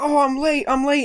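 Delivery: put-on very high, tiny little child's voice. Retelling what a kid said running back on a reality show, little kid voice. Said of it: "in this little kid voice".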